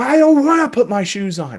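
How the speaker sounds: put-on shrill, loud, very high-pitched screaming child voice. Explaining to parents how to stay calm, imitating a child yelling. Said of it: "they're yelling and screaming and saying".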